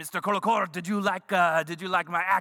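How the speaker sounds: mock, put-on French accent. Retelling a story, the speaker quotes a French performer asking about his act, in a mock French accent. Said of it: "that's what all Frenchmen sound like".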